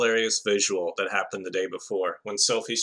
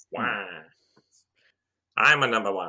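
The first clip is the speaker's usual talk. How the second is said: put-on cartoon villain voice. Imagining him honking the horn the whole way, the speaker does a Wario voice. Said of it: "use his Wario or Waluigi voice".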